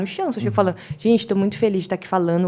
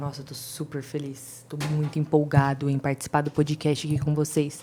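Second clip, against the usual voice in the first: flat, monotone delivery of cheerful words; 4 semitones lower, 6 dB quieter than usual. Showing the wrong way to sound happy about the podcast: flat happy line, wrong way. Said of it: "você não vai falar".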